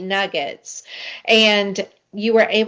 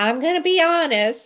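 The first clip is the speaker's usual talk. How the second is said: mimicked little voice, pitched much higher; 7 semitones higher than usual. Retelling what the listener said when she came to their classroom: imitating your little voice. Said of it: "the viewers hear your little voice".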